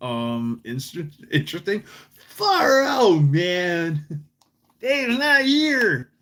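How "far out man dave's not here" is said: very slow drawl, word "man" stretched out long. Showing off voices and asking for approval: Tommy Chong impression. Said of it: "Tell me I sound like Tommy Chong".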